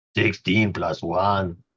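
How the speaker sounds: fake, put-on Spanish accent. Reading out a dice roll total: put-on Spanish accent. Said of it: "Now I've got the Spanish accent".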